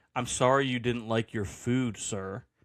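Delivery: imitated sassy tone, mock-sassy. Retelling what a server said to a complaining customer, mock-sassy. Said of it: "she said it with like some sass".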